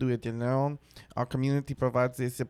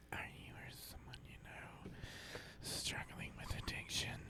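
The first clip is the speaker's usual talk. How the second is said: put-on soft, whispered ASMR girl voice. Hosts take off their headphones; one starts the bit in an ASMR girl voice. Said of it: "I'm gonna start with my A S M R chick".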